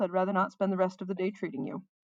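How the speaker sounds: plain reading voice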